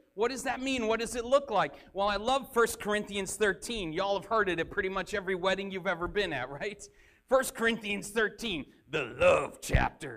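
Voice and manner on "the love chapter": put-on smooth romantic radio voice, pitched lower. Naming First Corinthians thirteen as a joke: Doctor Love impression. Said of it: "That's my best Doctor Love impression".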